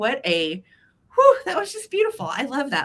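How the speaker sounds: teary, choked up, swooping, fighting back tears. Thanking a community member for something beautiful, holding back tears. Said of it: "I'm trying not to cry again".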